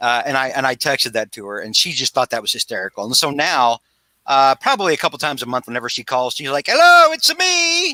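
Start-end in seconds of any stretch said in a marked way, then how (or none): 6.7-8.0 very high-pitched, loud calling out. Retelling how mom answers calls, imitating her Mario voice. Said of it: "Like she's Mario".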